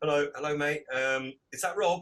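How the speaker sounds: ordinary delivery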